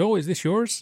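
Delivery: put-on high Canadian accent. Retelling what a guy said when he picked up the recorder, imitating a Canadian accent. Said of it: "in his wonderful Canadian voice".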